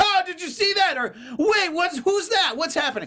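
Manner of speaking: very high movie-chatter voice. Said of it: "he'll talk to his buddy in that voice".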